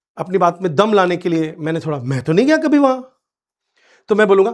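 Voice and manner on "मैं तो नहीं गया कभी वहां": a little excited, astonished, pitched-up voice. Showing how to add force when retorting to someone: excited, surprised retort. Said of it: "थोड़ा सा excited होकर के आश्चर्य के साथ".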